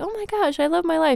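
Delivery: very high, creaky, gushing, bubbly caricature voice. Acting out a caricature of a Korean American playing field hockey, bubbly Korean American caricature voice. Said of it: "a like caricature of a Korean American".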